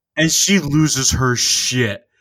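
usual speaking voice

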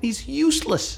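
mocking rant, high and fast.

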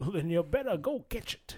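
put-on Scottish movie-star voice. Retelling a comedy bit of a prank phone call: Sean Connery voice. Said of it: "Sean Connery prank phone call channel".

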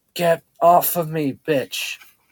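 low, slow half-whisper forced through gritted teeth. Pinned under the narrator's weight, he speaks in a low slow half-whisper, gritted teeth. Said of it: "he spoke in a low whisper, real slow between gritted teeth".

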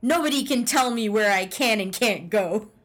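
ordinary talk, nothing marked

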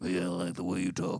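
put-on old-prospector character voice. Comparing a film character's voice to Billy Bob Thornton: Billy Bob Thornton Sling Blade voice. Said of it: "fucking Billy Bob Thornton from Sling Blade".

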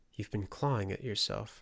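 ordinary talk

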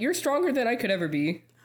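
high voice cracking partway through. Asked for a message to single parents, speaking to them directly, voice cracking. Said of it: "With the voice crack".

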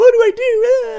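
very high, loud, slow, shrill hysterical wail. Retelling a woman calling the cops, imitating her hysterical panic. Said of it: "calling the cops hysterically like".

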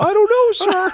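put-on very high nerdy teen voice. Retelling what a sixteen-year-old theater worker said: imitating a dorky kid. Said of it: "dorky kid".

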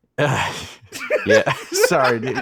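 words breaking into laughter. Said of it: "I couldn't get it out without laughing".

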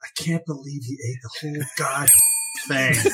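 hushed mutter under the breath. Retelling a sad scene, the speaker quotes a passing waitress, under her breath. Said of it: "under her breath".

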